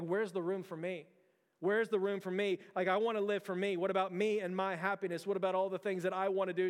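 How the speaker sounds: ordinary talk, nothing marked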